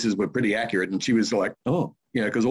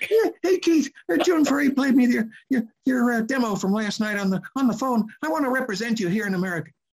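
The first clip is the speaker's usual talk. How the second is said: put-on husky little voice, much higher pitch; 14 semitones higher than usual. Retelling a phone call from a guy wanting to represent him, in Don Pitts's funny husky voice. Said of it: "had a funny, husky little voice like this".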